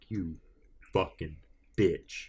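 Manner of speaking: vicious, guttural, throaty, mean, aggressive acted snarl. Describing how people sound when they insult: imitating a guttural, mean, aggressive insult. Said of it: "just guttural and, and mean and, and, and aggressive".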